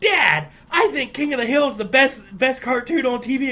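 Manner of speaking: put-on cartoon boy voice. Retelling a guy's impression, speaking to Dad in a Bobby impression. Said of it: "the best, well, really the only Bobby impression".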